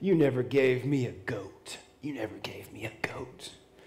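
bitter, resentful, angry tone. Acting out the older brother's complaint to his father: imitating an angry voice. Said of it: "you could just see the anger in his voice".

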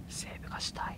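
soft, earnest, desperate whisper.

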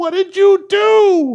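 very loud, very high, slow, drawn-out shrill screech. Retelling how someone screamed down an escalator at them: imitating someone screaming. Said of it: "she screams down at the top of her lungs".

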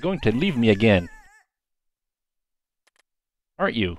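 crying through the words, tearful. In a drama scene after a plea for forgiveness, crying. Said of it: "Don't cry".

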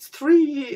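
high, slow, tearful crying. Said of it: "I'm sorry for crying".

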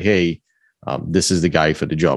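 normal talking voice

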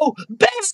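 piercing, very high scream full of terror. Voicing an orc woman as her friend is shot: terrified scream. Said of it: "she looks terrified as her friend is just shot".

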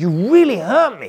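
really angry, high-pitched outburst. Retelling a woman's complaint in an elevator: imitating an angry woman. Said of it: "she gets really angry".

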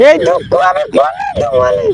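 high, wailing mock sob.

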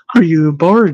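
usual speaking voice

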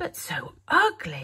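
gasped exclamation. Minnow reacts to what she has found, gasping. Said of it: "she gasped".

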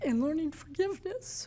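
very soft, quiet voice, barely holding back tears. Sharing a personal story in a conversation, fighting back tears. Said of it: "I'm trying not to cry".

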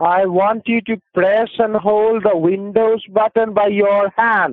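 shouting. Giving computer instructions to a man who can't follow them, yelling. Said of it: "Why are you yelling at me".

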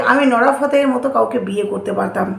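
plain

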